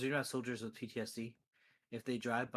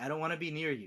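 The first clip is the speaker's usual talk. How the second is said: put-on begging voice, higher and louder; 5 semitones higher, 4 dB louder than usual. Retelling what a character says with his hands together, imitating someone begging. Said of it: "He's begging him".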